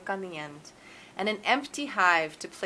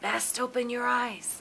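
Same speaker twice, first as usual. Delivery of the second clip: hushed half-whisper, under the breath; 4 semitones higher, 4 dB quieter than usual. Grandpa speaking to the narrator, who has closed their eyes: half-whispering. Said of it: "Grandpa whispers".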